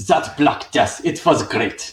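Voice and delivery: German-accented English. Asked whether they now want German, the speaker repeats the line in a German accent. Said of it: "Now you want German?".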